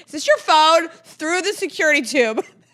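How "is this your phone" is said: mock, loud, yelled shouting. Retelling being yelled at across a security line: imitating someone yelling. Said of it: "Yells at me from across the".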